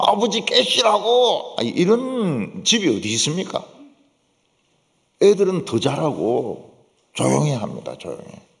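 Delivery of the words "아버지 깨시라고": mock childlike crying while talking, higher. Acting out children crying over their sleeping father: imitating crying children. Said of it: "막 자식들이 막 울면서".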